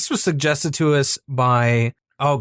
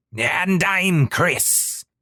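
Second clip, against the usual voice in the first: put-on pirate voice; 4 semitones higher than usual. Podcast co-host introducing himself at the start of the show, in a pirate voice. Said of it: "I was trying to be a pirate".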